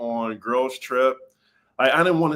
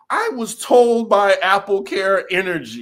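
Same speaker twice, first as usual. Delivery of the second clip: loud, high, haughty, entitled put-on voice; 7 semitones higher, 5 dB louder than usual. Describing a housewife's attitude: imitating Dorinda's entitlement. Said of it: "the type of entitlement that she brought".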